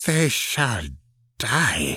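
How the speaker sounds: hissed through the teeth, swooping pitch. Narrator reads a woman's line as she looks into the pit, hissed. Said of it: "she hissed".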